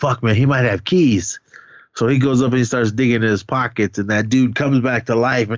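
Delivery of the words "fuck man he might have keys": usual speaking voice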